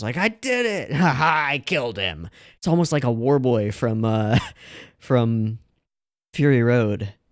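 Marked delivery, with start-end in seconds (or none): 0.2-2.3 put-on giddy, gleeful gloat, high and swooping, laughing. Describing a character's voice performance, imitating the character's glee. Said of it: "the glee that this character shows".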